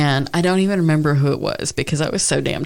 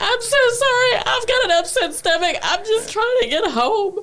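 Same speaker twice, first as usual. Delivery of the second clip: very high, fake-tearful, put-on crying voice. Retelling how a woman cried on cue to a cop: imitating fake crying. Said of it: "So she starts crying".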